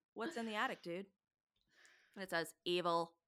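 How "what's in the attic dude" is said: relaxed, easygoing, laid-back, chill tone. Retelling Billy's question to the puck, Billy's question in a put-on chill voice. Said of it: "It's probably way more chill".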